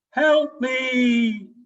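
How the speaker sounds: very high, loud, altered cry with "me" drawn out. Storyteller showing examples of instruments, voice altered through thunder maker. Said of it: "I can also change my voice".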